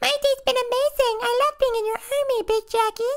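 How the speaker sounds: very high, dumb-sounding voice. Voicing a mini clone answering Big Jacki's interview question, idiot-sounding Mini Jacki voice. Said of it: "he kind of sounds like an idiot".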